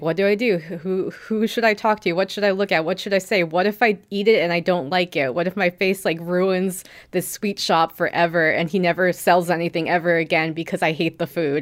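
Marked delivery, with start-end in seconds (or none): none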